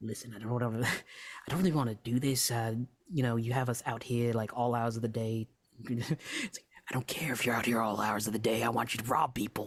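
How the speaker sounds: loud theatrical stage whisper. Narrating a heated conversation with someone sitting on a stump, speaker uses a stage whisper. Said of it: "it's more stage whispers at this point".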